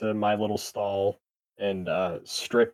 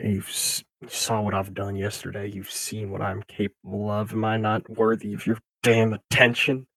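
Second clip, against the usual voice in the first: quiet, said softly as if to oneself. A character looks up at the water while praying, said quietly to oneself. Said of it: "say quietly to myself".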